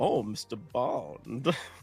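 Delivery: low, menacing spy-film villain voice. Imitating the villain from Skyfall saying the hero's name: Skyfall villain voice. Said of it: "the villain from Skyfall".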